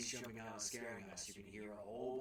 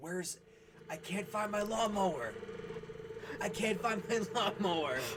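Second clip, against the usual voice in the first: put-on high, piercing, shrill girl's shrieks at full volume; 9 semitones higher, 10 dB louder than usual. Describing a girl screaming in the Cornered section, imitating a screaming girl. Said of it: "there's a girl screaming in there".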